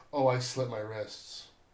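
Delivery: put-on nonchalant, casual delivery. Retelling a movie scene where a character answers: imitating a nonchalant line. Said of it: "brought up almost so nonchalantly".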